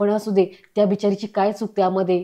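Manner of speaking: ordinary delivery, nothing marked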